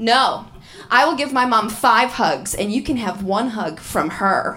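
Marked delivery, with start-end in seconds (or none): none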